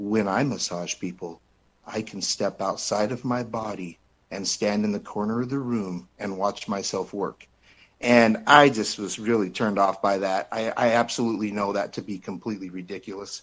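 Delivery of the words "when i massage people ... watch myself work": soft, soothing, very calm delivery. Retelling what a massage therapist told them, imitating her very calming voice. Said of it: "she gets out in like a very calming voice".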